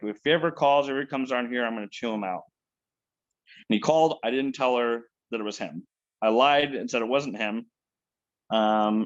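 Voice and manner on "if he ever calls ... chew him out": ordinary delivery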